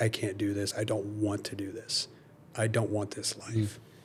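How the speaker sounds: imitated frustration. Retelling own words while failing to get into the tub: retelling own frustrated words. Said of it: "being frustrated and saying the words".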